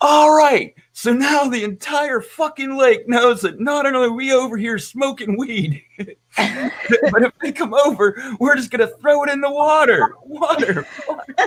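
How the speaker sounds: exasperated, fed-up hollering, very high. Retelling yelling at friends for being too loud: retelling own yell. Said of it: "started yelling".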